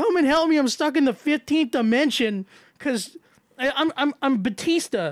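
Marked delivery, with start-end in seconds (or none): 0.0-2.5 acted yell, higher pitch. Retelling getting stuck and calling for help, retelling a yell for help. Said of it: "I'm like yelling at Iggy".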